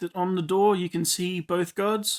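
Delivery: ordinary delivery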